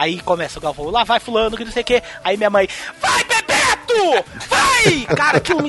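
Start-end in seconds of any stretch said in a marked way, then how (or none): 3.0-5.2 mock shout, much higher, louder, slower. Speaker recalling his mom watching the World Cup, imitating her shout. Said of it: "Ela dá um grito".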